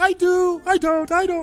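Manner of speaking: squeaky, very high-pitched voice. Trying to do a Mickey Mouse voice while saying wedding vows. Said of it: "I'm trying to do a Mickey Mouse voice".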